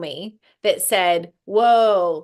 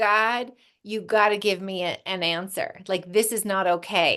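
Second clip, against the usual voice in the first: mock tearful, crying voice; 4 dB quieter than usual. Recalling praying in the truck on the way home, imitating own crying prayer. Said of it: "boo-hoo and crying".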